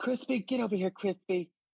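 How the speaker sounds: very high, effeminate voice calling out. Retelling a guy calling his dog away: imitating an effeminate voice. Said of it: "I heard a very effeminate voice".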